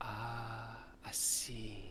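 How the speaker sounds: female voice with a drawn-out ah. Voicing a woman heard outside a stopped wagon: female character voice. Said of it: "you hear a female voice go".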